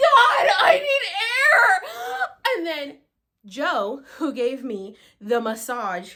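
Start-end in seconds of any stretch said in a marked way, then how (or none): 0.0-2.6 very high, very slow, stretched-out yell. Retelling gasping for breath during a session: imitating her own yell. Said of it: "And I literally yelled".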